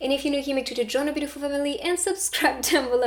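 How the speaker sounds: rushed, rattled off, way too fast. Signing off a reading and asking viewers to subscribe, talking way too fast. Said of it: "I'm talking way too fast".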